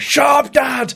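loud, high-pitched put-on shout.

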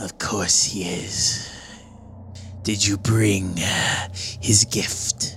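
hushed, whispered character voice. Narrating a scene, a whispering figure answers another voice, whispered voice. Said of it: "this kind of whispered voice goes".

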